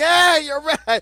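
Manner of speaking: loud yelled call. Telling a story about a lady who would not turn around, retelling everyone's yelling. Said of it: "everybody now was yelling".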